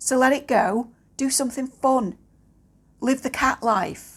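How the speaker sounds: earnest, fervent, rousing delivery. Speaker giving advice to a listener, shouting. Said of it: "I'm sorry I'm shouting".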